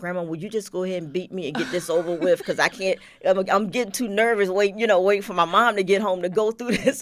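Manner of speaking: tearful pleading voice. Retelling begging Grandma to beat him before his mom got home, retelling crying and begging. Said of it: "I'm crying and begging her to beat me".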